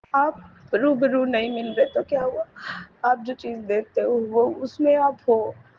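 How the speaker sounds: weeping, tearful, crying through the words. Thanking the guru for a blessing, crying while talking. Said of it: "मैं रो रही हूँ".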